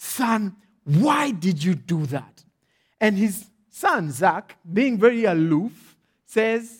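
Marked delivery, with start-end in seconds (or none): 0.0-2.4 frustrated, angry, demanding tone. Retelling a father questioning his son after a fall: imitating an angry, frustrated father. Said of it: "in anger and in frustration".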